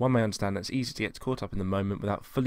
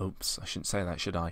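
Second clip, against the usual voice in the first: mocking, sarcastic put-on with dripping, heavy sarcasm; 4 dB quieter than usual. Retell the remark they made after he talked about his channel, mock-sarcastic. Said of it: "they sarcastically went".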